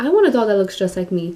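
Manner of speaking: normal talking voice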